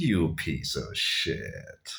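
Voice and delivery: put-on, very slow, drawn-out, good-natured teasing. Retelling what a woman said over coffee: imitating a smiling, not angry insult. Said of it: "she actually had, like, a smile on her face".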